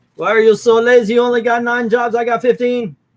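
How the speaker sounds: put-on very loud, high Jamaican accent. Quoting a sketch from the show, In Living Color Jamaican accent. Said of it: "Me doing that accent".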